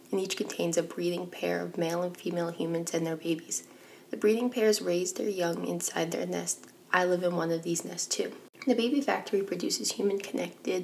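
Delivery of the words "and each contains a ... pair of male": usual speaking voice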